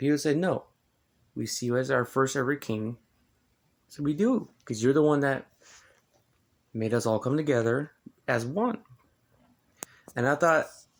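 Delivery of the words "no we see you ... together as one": usual speaking voice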